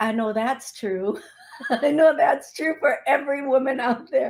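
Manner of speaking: amused delivery, talking through laughter. Speaking to the women in the audience, laughing while talking. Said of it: "I'm sorry I'm laughing at this".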